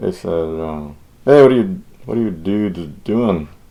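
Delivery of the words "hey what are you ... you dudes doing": casual, friendly buddy-style call. Quoting buddies from down the hall greeting the speaker's group: retelling it very slowly. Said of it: "I have to say that very slowly".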